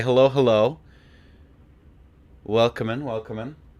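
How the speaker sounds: groggy, sleepy-sounding voice. Greeting viewers after the alarm failed to go off: groggy voice. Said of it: "groggy at the minute".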